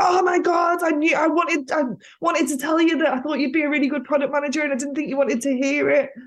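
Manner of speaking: high, thrilled, excited screaming gush. Retelling a phone call where the mentor reacted: imitating someone screaming excitedly. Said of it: "she literally started screaming down the phone at me".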